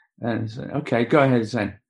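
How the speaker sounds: normal talking voice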